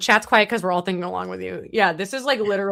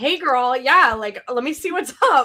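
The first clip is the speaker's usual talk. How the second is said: high, casual, chatty gossipy tone; 5 semitones higher, 4 dB louder than usual. Describing why yappers love Opus: chatty Opus impression. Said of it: "Opus is like".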